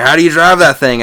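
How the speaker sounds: loud country dude voice. Retelling what country guys ask about a lowered car: imitating a country dude. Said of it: "country dudes will be like".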